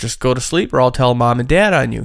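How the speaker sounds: normal talking voice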